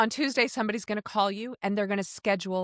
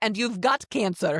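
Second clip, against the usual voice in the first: thick, put-on Russian accent. Retelling a phone call from a lovely nurse, imitating her thick russian accent. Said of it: "But just coming across in Russian".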